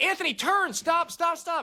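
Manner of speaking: put-on very high, shrill, drawn-out scream. Retelling a warning during a sandstorm near a cliff: imitating own past screaming. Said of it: "And I'm screaming".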